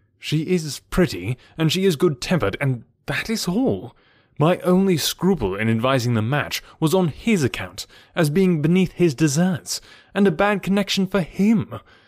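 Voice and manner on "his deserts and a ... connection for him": ordinary delivery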